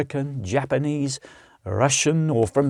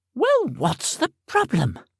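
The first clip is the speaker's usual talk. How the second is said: very high, swooping, exasperated and impatient; 10 semitones higher than usual. Reading an audiobook scene aloud, a castle woman's line: demanding, out of patience. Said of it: "the woman demanded".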